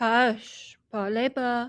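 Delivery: disguised voice, broken French. Answering someone who calls for Milanette in the dark: disguised voice, broken French. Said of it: "disguise my voice and make the best of French".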